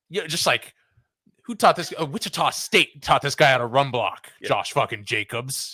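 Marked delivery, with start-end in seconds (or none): 1.4-5.7 put-on hyped-up coach voice, higher. Retelling an old Hard Knocks clip, imitating Jon Gruden hyping up. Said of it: "I love him hyping up. He's like".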